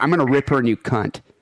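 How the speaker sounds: put-on furious, angry voice. Retelling an angry phone call from a friend: imitating someone furious. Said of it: "she was really, really angry".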